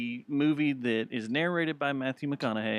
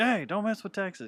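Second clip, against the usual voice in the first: high-pitched shouted yelling; 7 semitones higher than usual. Telling how it comes into a trash bag looking for a home, act out a yell. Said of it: "He yells at".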